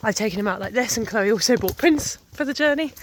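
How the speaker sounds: plain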